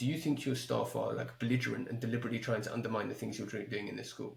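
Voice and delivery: normal talking voice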